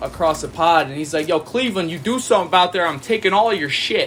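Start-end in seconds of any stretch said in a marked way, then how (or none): none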